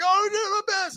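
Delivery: very high, breaking-down, falling-apart scream. Retelling a sad film scene, imitating Mel Gibson screaming. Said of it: "and he's, like, screaming".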